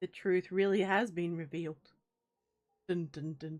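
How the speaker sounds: ominous, spooky scary-story narrator voice. Joking that a conspiracy has been exposed, the speaker narrates in a scary story narration voice. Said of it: "broke into my scary story um narration voice".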